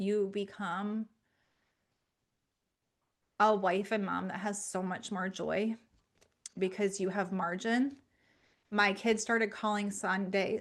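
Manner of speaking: tearful, choking up, near crying. Describing what keeping sunday as a day of rest changed, tearful, near crying. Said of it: "I cannot talk about it without crying".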